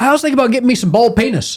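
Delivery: put-on broad North Carolina Southern accent, very high-pitched. Retelling a best friend's remark, in Tia's Hickory Southern accent. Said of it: "the most uh, Hickory, North Carolina Southern accent ever".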